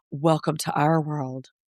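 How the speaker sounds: low, quiet mumbling. Retelling what Ariana said after Kristen's remark, muttering like Ariana. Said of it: "Ariana mutters under her breath".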